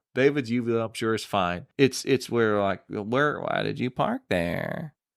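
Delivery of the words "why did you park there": put-on valley girl voice, quieter and slower. Hosts discuss a speech style; one demonstrates it in a Valley Girl voice. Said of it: "the Valley Girl thing".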